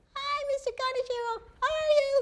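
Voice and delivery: very high, squeaky little voice. Giving an example of a young doctor's office receptionist greeting a caller, squeaky receptionist voice. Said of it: "it's a very squeaky voice".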